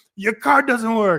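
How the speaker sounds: very high-pitched, shrill, loud, irritated shout. Retelling how a guy leaned out and shouted: imitating someone shouting. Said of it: "leans out and shouts at me".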